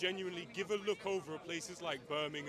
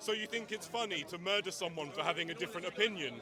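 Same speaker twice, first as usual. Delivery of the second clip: usual speaking voice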